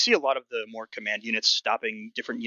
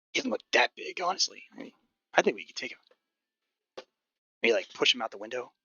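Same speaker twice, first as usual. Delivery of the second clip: hushed whisper under the breath. A player's character quietly suggests getting the jump on a guy, whispering under his breath. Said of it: "Whispers uh, under his breath".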